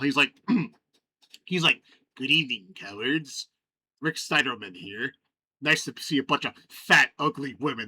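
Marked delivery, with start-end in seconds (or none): 2.2-7.9 put-on low old man's voice. Retelling a town hall video the speaker showed on stream: imitating Rick Steiderman's voice. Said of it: "I can emulate his voice pretty well".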